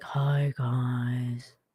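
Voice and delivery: play-acted low, groggy, just-woken-up sleepy voice. Retelling how Tom greets everyone when arriving late, imitating Tom just woken up. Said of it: "he's just woken up".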